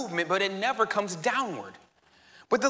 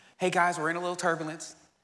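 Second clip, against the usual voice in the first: mock-calm pilot announcer voice, quieter; 4 semitones lower, 4 dB quieter than usual. Acting out a pilot addressing passengers: imitating a calm pilot. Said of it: "It's like a calm voice".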